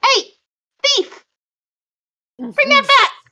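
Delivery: very high, loud, small squeaky voice. A tiny voice calls out to the player who took the ball of light, tiny little voice. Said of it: "a tiny little voice says".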